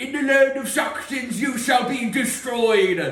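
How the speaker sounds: booming, menacing knight voice. Narrating to the players as the evil knight threatens them: booming knight voice. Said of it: "His voice booms over you".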